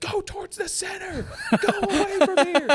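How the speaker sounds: mock very high, long, drawn-out screaming. Retelling shouting at people in a mosh pit: retelling own screaming. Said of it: "I'm just screaming".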